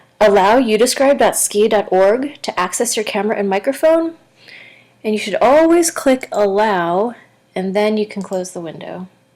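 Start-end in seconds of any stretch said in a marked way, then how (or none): none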